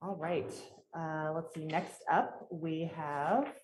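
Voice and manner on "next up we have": very slow, loud, deliberately stretched, drawn-out words. Chairing a meeting while stalling for someone to arrive, speaking slowly. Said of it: "I'm speaking slowly because I'm uh".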